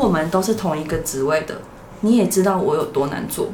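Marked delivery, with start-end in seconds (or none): none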